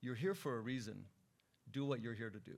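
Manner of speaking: mock-stern, stern put-on voice. Retelling what an elder councilman told the speaker, retelling a stern remark. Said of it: "sternly said".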